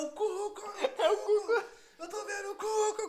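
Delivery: put-on very high, stretched-out, drawn-out yelling. Retelling how a man staring straight ahead started screaming, imitating him shouting. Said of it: "Começou a gritar".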